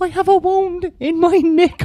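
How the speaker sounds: very high, put-on little old woman voice. Retelling what a man said while asking about bandages, in a put-on old woman voice. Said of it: "he actually was putting on the voice of a of an old woman".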